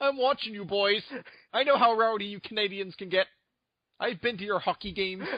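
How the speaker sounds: put-on Canadian accent. Speaker voicing a Canadian army veteran, in a put-on Canadian accent. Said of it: "you're actually moving away from Canadian".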